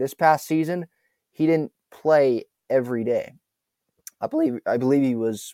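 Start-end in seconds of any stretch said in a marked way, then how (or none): 4.2-5.5 voice cracking mid-phrase. Discussing a baseball player's playing time, the voice cracks. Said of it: "that's a voice crack".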